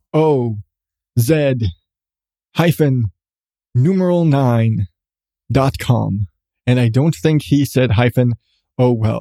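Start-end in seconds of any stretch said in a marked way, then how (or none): 0.1-6.2 put-on, very English announcer voice, pitched lower. Speaker repeating the web address the way their promo's announcer said it, very English announcer voice. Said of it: "as the very English announcer voice in their promo said".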